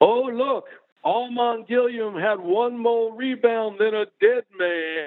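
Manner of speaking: dramatic reading, high-pitched and slow.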